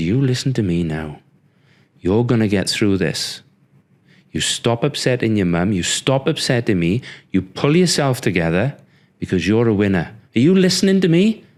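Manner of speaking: stern, forceful, commanding, scolding tone. Retelling a father gripping him in a hospital bed: imitating a forceful telling-off. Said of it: "he was like the Incredible Hulk".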